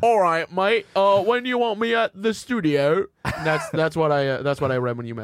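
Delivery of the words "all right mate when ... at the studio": put-on friendly English accent, high, slow, unhurried. Playing along with a friend, doing an Ollie impression, English accent. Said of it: "that was a great Ollie impression".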